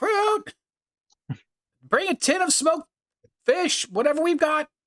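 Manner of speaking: motherly calling voice, pitched very high. Voicing a shopkeeper calling to a helper: motherly voice calling out. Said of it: "to the motherly, you know, she calls out".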